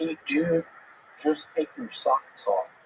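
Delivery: swooping, buzzing mosquito voice. Asked to do an impression of a mosquito, mosquito impression. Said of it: "what can we see your impression of a mosquito?".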